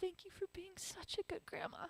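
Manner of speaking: hushed half-whisper. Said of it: "I whispered in her ear".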